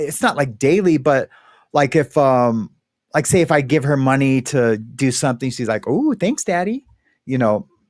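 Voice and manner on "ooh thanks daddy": super playful, pitched-up, little voice. Retelling how Mariana thanks after getting money: imitating Mariana, super playful. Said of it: "super playful".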